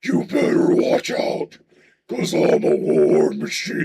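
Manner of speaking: very slow, crumbling death metal growl. Testing whether the speaker can do it, attempted death metal voice. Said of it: "the death metal is gonna break up".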